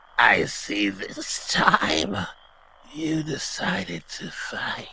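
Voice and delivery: very high, very drawn-out, taunting cackle. Voicing an unseen creature taunting a player who chose to fight: cackling. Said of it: "And you hear a cackle".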